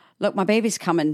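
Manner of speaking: normal talking voice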